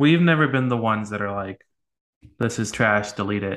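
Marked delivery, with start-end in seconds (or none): none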